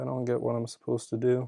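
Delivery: plain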